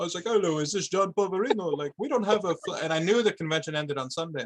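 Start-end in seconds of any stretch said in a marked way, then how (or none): 0.3-2.8 put-on Indian accent. Speaker retells a prank phone call to a man: Indian accent. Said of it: "I get like this Indian accent".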